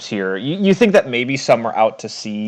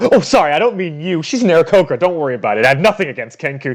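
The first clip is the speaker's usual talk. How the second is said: high, flustered, hard backpedaling tone; 5 semitones higher than usual. Voicing a captain backpedaling after offending someone: backpedaling really hard. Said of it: "She said trying to backpedal really hard".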